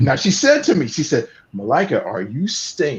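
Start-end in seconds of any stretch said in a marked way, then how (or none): 1.5-3.0 mock sarcastic delivery. Retelling what Rachel said back to the speaker: imitating Rachel being sarcastic. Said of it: "she's being very, very, um, sarcastic".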